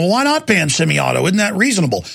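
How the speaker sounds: ordinary talk, nothing marked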